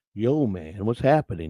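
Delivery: groovy, laid-back, easygoing sixties dude voice. Imagining how a caller would sound from his picture: put-on laid-back sixties guy voice. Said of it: "kinda like a sixties guy, laid back".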